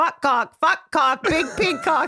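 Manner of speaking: put-on squeaky, very high little-kid voice. Retelling her toddler waking at night: imitating her toddler daughter. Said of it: "she was like".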